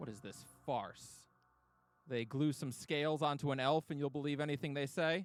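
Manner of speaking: heated, angry, demanding outburst. Reading a scene aloud, the speaker voices Counselor Rune, angry. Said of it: "Counselor Rune looks so angry".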